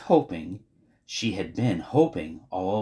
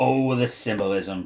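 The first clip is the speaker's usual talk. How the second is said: plain reading voice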